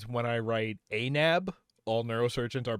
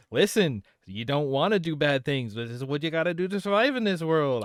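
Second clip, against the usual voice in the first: put-on New York accent; 3 semitones higher, 4 dB louder than usual. Voicing an imagined street-smart thief kid from a fantasy anime, stereotypical new york accent. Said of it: "stereotypical New York".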